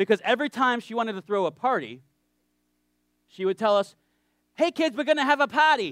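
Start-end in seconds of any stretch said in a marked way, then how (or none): 4.5-5.9 put-on thick Boston accent, pitched up. Retelling what a woman told the fifth graders before parties, in a thick Boston accent. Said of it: "a very thick Bostonian accent".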